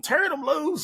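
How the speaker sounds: acted, very high, shrill country-accent holler. Recalling going into town and having fun with a phrase, retelling screaming in town. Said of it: "we were screaming".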